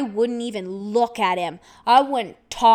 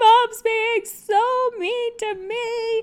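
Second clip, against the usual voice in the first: put-on, very high, blubbering drunk wail, sobbing; 12 semitones higher than usual. Retelling complaining to dad about mom while drunk, imitating own crying. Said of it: "and I'm crying".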